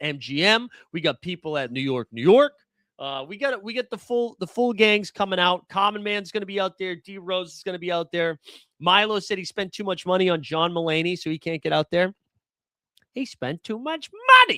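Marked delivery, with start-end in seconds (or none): 13.1-14.6 bad, very high comic voice, swinging wildly in pitch. Repeating a friend's excuse as a John Mulaney impression. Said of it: "that was a John Mulaney impression".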